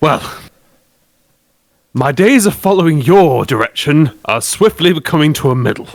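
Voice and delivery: weary, breathy delivery after a big sigh. Asked what the group wants to do, a player speaks in character, very loudly. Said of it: "very loudly say".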